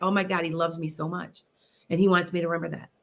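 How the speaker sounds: fast, put-on tearful crying outburst. Recalling a hypnosis client talking after her session, imitating someone crying. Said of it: "she's just like crying".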